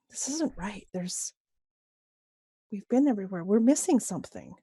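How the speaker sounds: quiet mutter under the breath, half to self. Voicing a character who finds the room is a dead end: muttering under the breath. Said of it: "she says kind of under her breath".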